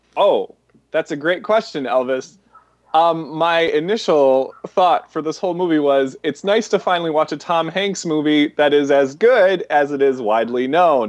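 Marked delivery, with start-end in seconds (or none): 6.3-11.1 dry sarcastic delivery. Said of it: "That's sarcasm".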